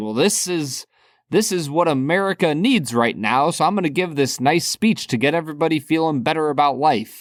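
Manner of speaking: ordinary talk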